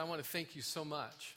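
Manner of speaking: mock grateful sarcasm. Retelling what a guy who drove up to the driveway said: retelling sarcastic thanks.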